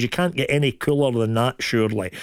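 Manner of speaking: ordinary delivery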